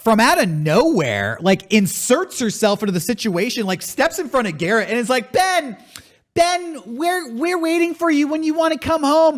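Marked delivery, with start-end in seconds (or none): 5.3-9.4 very high, earnest, theatrical, acted pleading tone. Retelling a stranger who pleads with an actor: imitating a lady speaking in character. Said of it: "doing all this in character".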